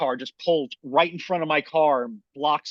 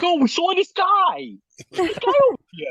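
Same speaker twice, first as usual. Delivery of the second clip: put-on Brooklyn accent, much higher, louder; 5 dB louder than usual. Retelling what a guy said, mimicking how he talked: imitating a Brooklyn-style accent. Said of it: "are you trying like to be like from Brooklyn?".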